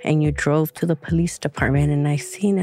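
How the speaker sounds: ordinary talk, nothing marked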